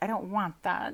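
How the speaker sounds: plain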